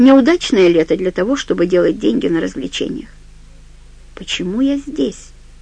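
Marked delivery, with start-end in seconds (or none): 4.1-5.3 soft whisper, as if to oneself. Reading a novel aloud, voicing a woman talking to herself: whispered. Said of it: "прошептала она".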